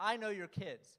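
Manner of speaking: very loud, high-pitched hollered shout. On a gurney in the emergency room, the speaker shouts at a nurse: retelling a shout. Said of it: "and I shouted at her".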